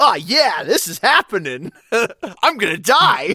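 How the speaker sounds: cool, laid-back, high, loud skater bro voice. Describing a game character thrown into danger, imitating a cool skater bro. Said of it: "this like cool skater bro of like".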